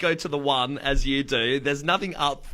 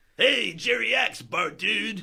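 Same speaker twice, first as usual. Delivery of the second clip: put-on stoner cartoon voice, much higher; 7 semitones higher than usual. Doing an impression for the hosts after stepping back from the microphone, Otto from The Simpsons impression. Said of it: "my impersonation is Otto from The Simpsons".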